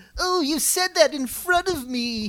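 very high-pitched, drawn-out, dopey cartoon voice. Imitating how an actor plays a weird character: imitating a goofy line delivery. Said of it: "He does a really goofy, like".

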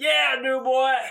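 shrill, booming, very loud, high space-pirate holler. Retelling an actor's answer at a convention booth: Michael Rooker talking like Yondu. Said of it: "He just talks like Yondu".

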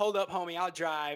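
ordinary talk, nothing marked

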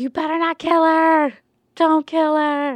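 high, loud yelling dragon voice. Retelling a scene where the dragon yells at everyone; imitating Drogon yelling. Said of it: "Drogon's also yelling at everyone".

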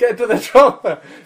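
very loud, very high-pitched bellowing shout. Retelling a film scene where Arnie lands and shouts: imitating Arnie shouting. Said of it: "he shouts out the one quote".

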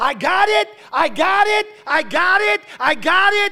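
repeated, very loud, very high shout at full voice. Preaching, recounting a friend jumping up in church, imitating someone shouting. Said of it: "He jumped up and he started shouting".

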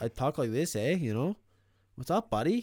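strong hockey-guy Canadian accent. Demonstrating how he talks to the others, in a hockey-guy Canadian accent. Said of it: "Don't pick on the Canadian accents".

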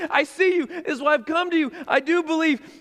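pleading, begging tone.

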